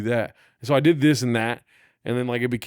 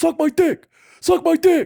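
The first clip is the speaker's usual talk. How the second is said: mock screaming, higher and louder; 7 dB louder than usual. Retelling a driver's angry reply during a car argument: imitating a man screaming. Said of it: "screaming at me".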